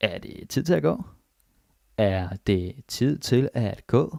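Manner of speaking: very slow, careful phrasing. Teaching Danish phrases to learners, saying each one very slowly and carefully. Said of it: "I'm saying these very slowly".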